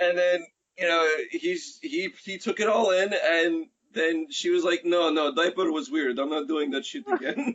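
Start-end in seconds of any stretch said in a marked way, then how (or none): 4.8-7.6 put-on Russian accent, complaining tone. Acting out a woman talking to a grown man as her baby: russian voice. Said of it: "Your Russian voice".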